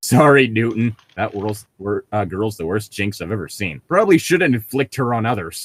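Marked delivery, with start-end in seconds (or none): none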